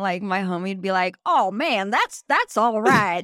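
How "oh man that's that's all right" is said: loud put-on Southern preacher accent, televangelist style. Retelling how a friend talked in character: imitating a Southern televangelist accent. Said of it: "Southern televangelist kinda like".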